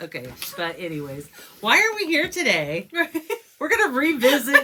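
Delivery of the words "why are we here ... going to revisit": loud, high-pitched yelling. Host introducing today's episode to her co-host, yelling. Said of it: "She's yelling at me".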